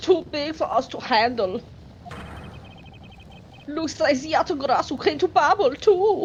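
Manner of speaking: put-on German accent. Voicing a character's line, slipping into a jokey German accent. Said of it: "I'm not trying to make this like the jokey German accent".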